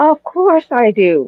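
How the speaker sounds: sounding sarcastic. Asked whether they need a man, answering sarcastically. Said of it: "that sounded sarcastic".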